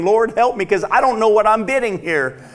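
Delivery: high, panicky, desperate voice. Retelling a prayer while bidding at an auction: retelling a panicked prayer. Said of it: "And I'm panicking".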